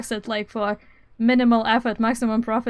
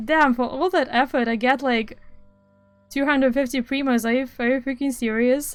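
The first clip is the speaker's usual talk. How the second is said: ordinary delivery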